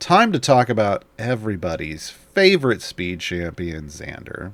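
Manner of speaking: openly sarcastic, audible sarcasm in every word. Introducing the next champion in a speed rundown, sarcastic. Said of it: "Can you hear the sarcasm in my voice?".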